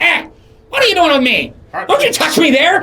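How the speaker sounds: shrill, very high, very loud squawking creature voice. Game master voicing a sword that squawks as a player picks it up. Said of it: "you can see as it squawks".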